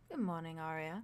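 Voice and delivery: soft, quiet, deep baritone voice. Voicing a ghostly figure greeting a player: soft deep baritone. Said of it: "a deep baritone comes from his mouth. He very just softly says".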